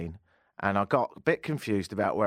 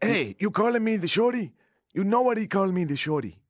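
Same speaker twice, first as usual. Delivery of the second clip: rough, pitched-up attempted Mexican accent; 12 semitones higher, 3 dB louder than usual. Speaker trying an accent while quoting someone: attempted Mexican accent. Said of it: "I just can't do the Mexican accent".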